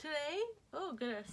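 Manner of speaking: yawning while talking. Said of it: "see, I'm yawning".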